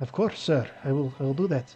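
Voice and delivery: put-on Russian-accented voice. Storyteller voicing a woman in the scene as she answers him, in a russian accent. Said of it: "Did you just make her do a Russian accent?".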